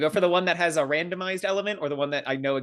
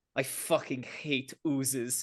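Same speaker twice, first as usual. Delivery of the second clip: soft, low grumble under the breath; 8 dB quieter than usual. Player voicing their character turning around, muttering quietly under her breath. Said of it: "you hear her say this quietly under her breath".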